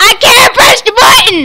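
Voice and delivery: high, loud, frantic screaming at full volume.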